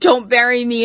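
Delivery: normal talking voice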